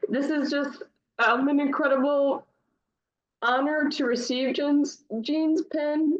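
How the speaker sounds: crying, tearful while speaking. Recipient accepting an honor pin, crying. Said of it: "I'm already crying".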